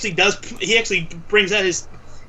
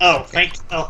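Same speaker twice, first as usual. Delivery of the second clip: ordinary delivery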